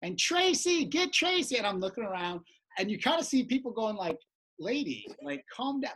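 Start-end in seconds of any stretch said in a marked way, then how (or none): 0.0-1.6 very high, loud, insistent yelling. Recounting a lady who wouldn't stop shouting a name, imitating a woman yelling. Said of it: "And she's yelling".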